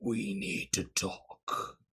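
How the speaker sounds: deep, slow, monstrous, beastly demon voice. Recapping the last session, voicing a giant demon: beastly demon voice. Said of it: "in a beastly voice said".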